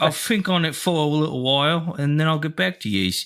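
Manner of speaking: high, put-on London Cockney accent. Mocking an accent the other speaker hates, in a mock Cockney accent. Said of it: "I hate that accent".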